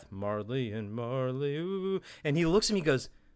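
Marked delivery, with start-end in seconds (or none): 0.1-2.0 put-on quiet muttering under the breath, quieter. Retelling a moment in class, imitating a mutter under the breath. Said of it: "under my breath".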